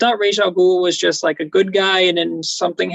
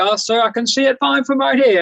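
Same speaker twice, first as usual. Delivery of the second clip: put-on wavering butler accent, pitched up; 6 semitones higher than usual. Reviewing a Batman film, retelling the butler's reply in a scene, Alfred accent impression. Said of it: "my my accent impression is wavering".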